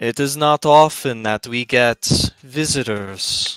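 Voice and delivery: big cacophonous voice. A narrator voices an unseen host speaking to the guests, in a large, cacophonous, echoing voice. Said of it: "this large, cacophonous, echoing voice".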